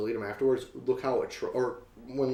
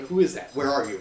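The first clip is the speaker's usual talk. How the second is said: put-on angry dog voice, louder; 6 dB louder than usual. Retelling how a barking dog reacted to a voice from the TV: imitating an angry dog. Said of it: "he just sounded really angry".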